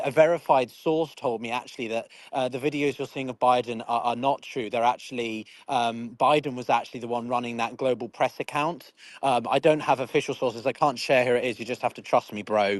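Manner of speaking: plain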